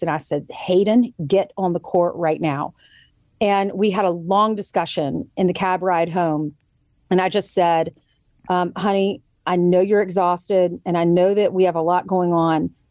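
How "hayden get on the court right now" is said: firm, dark, stern parental voice. A mother retells ordering her child back onto the court, retelling her firm voice. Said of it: "I had to use my firm voice".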